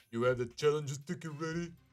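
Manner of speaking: stock burly big-guy voice. Voicing a character asking whether the challenge ticket is ready, in a stereotypical big guy voice. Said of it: "I'm giving him a stereotypical big guy voice".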